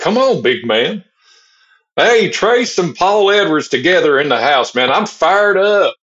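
thick Southern twang, way up high. Asked on a podcast to imitate an earlier guest, do a Big A impression, thick Southern twang. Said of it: "he's got the thick Southern twang".

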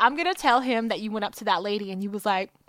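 plain

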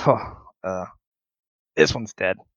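orc voice talking through a chuckle. Narrator voices an orc throwing goblins into a cage, chuckling orc. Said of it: "you hear the orc stop and chuckle and goes".

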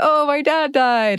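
very high, slow, cheery, upbeat, half laughing. Retelling a character's reply about her father's death: imitating someone saying it upbeat, laughing. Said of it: "And she says it really upbeat, is kinda laughing".

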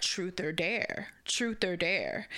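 seductive, sultry male ad-style voice. Retelling an ad that pops up in a game, in a put-on sultry man voice. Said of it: "it's like this sultry, like man voice".

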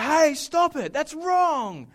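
bold, loud, high-pitched, deliberate yell. Recounting yelling out at a guy kicking his girlfriend, retelling a yell. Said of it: "I just yelled out".

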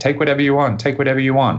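put-on shrill, very high-pitched screaming. Retelling a break-in where the fiance begged the intruders: imitating someone screaming. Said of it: "he started screaming".

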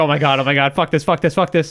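normal talking voice

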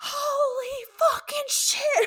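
high, frantic, panicked shrieking scream. Retelling a fishing mishap, re-enacting how you started screaming. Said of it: "I start screaming".

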